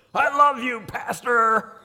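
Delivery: put-on big old raspy voice, pitched very high. Pastor retelling a woman calling after him down the hallway: big raspy voice. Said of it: "this big old raspy voice".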